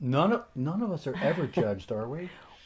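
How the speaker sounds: swooping sarcastic tone. Answering whether the family has been judged with a joking denial: sarcastic. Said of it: "attempt at being silly and, and, you know, sarcastic".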